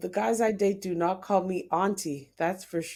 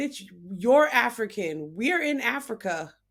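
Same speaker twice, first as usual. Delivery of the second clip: ordinary talk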